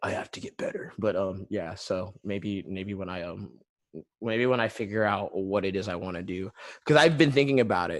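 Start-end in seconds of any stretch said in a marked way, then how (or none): 0.0-0.9 soft unvoiced whisper. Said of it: "I'm always like".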